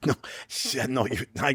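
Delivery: talking through laughter. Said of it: "I'm sorry for laughing".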